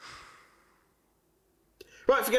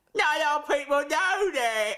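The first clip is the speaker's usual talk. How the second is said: high-pitched, mocking, imitated voice. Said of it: "That's what you sound like".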